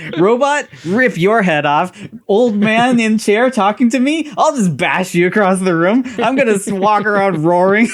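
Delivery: shrill, very high, angry, brutish lumbering-monster voice. Mocking an alien in a movie who just bashes things: imitating an angry lumbering monster.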